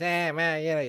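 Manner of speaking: little Australian punk kid voice, put-on Australian accent. Retelling what a scrawny kid on a scooter said, imitating an aussie punk kid. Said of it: "talking like a little Aussie punk kid".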